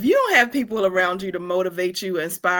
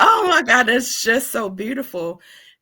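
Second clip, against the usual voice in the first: teary voice, holding back crying; 4 semitones higher than usual. Reacting to what the other speaker shared, fighting back tears. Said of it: "I'm not gonna start crying".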